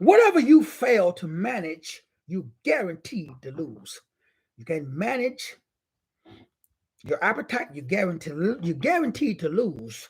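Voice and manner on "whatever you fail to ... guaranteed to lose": slow, deliberate, each word laid out separately. The speaker repeats his saying a second time, said slowly.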